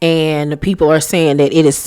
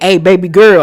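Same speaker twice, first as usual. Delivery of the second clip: raised, menacing voice with a veiled threat; 3 semitones higher, 5 dB louder than usual. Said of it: "that's that threatening voice that he used to get".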